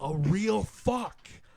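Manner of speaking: high, slow, loud, awed gush.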